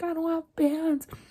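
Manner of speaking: mild yell. Retelling waking up without pants, re-enacting yelling to their mother. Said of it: "I'm like yelling".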